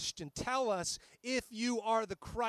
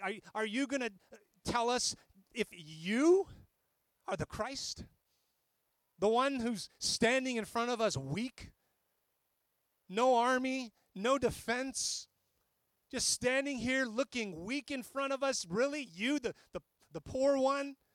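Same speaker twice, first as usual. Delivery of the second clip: heavily sarcastic put-on tone; 2 semitones higher than usual. Acting out the high priest questioning Jesus: imitating sarcastic questioning. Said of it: "was asking this sarcastically".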